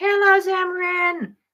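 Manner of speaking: cute, very high little voice. Retelling how his dad voiced his stuffed monkey greeting him, cute little Mister Monkey voice. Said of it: "my dad would do a cute little voice for him".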